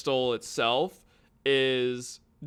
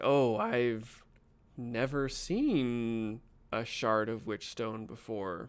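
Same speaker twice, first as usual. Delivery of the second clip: reverent, awed tone; 4 dB quieter than usual. Voicing a character who sees a Witch Stone shard: reverent tone. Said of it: "a reverent quality to him".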